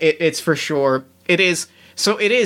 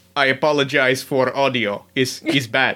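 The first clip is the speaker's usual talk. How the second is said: low, mock Russian superhero accent. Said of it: "do Brimstone's voice".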